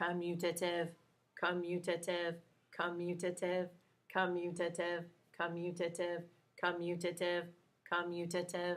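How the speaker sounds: soft, flat robot voice, every word identical. Teacher asks the class for the best robot voice ever: robot voice. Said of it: "best robot voice ever".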